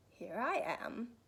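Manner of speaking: growling storybook bear voice. A narrator reads a character answering someone who calls for him; growly voice. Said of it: "came a growly voice behind him".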